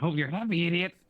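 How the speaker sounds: very high voice like inhaled helium. Voicing a tiny flea talking back to the person who scratched it off, in a high helium voice. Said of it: "I'm going very helium voice for this".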